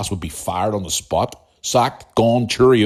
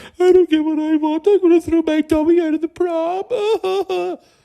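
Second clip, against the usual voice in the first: put-on squeaky, very high, drawn-out whiny crying. Mocking people who go around crying when they don't get their way: mock crying. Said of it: "going around crying 'cause they don't get what they want".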